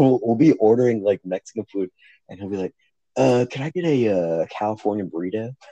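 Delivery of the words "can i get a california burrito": put-on Southern accent, slower. Retelling how a californian guy orders mexican food, southern accent impression. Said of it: "and he goes like Southern".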